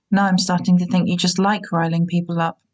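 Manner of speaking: usual speaking voice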